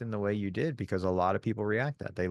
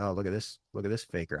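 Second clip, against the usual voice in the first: put-on hushed muttering, lowered voice. Speaker retelling what people say to the person next to them, imitating a lowered voice. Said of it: "try to lower their voice and talk to the person next to them".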